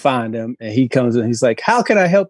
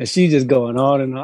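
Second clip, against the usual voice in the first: ordinary talk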